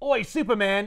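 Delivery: put-on loud Cockney accent called out across a crowd. Recounting a story where Lex Luthor the Second calls to Superman, Cockney accent. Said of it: "that was Cockney".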